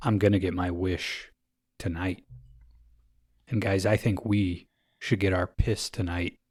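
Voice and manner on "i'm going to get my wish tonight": acted-out, mock-ominous tone. Podcast host recapping a movie scene, quoting a character, mock-ominous. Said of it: "He says ominously".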